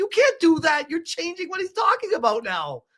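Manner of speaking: high-pitched yell. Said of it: "I'm, like, yelling at the screen".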